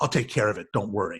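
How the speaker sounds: as nasty a voice as possible. Retelling being called out, the speaker quotes herself in the nastiest voice possible. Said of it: "in the nastiest voice possible".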